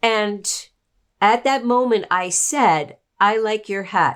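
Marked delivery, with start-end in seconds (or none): 3.2-4.2 deadpan, very bland monotone with no inflection. Recalling a remark the speaker once made, very bland, no intonation. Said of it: "Very bland, no no intonation".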